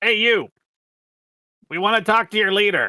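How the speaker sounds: very loud, very high, booming shout. Calling out in character to a crowd of elves for their leader: shouting. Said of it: "that you're kinda shouting to".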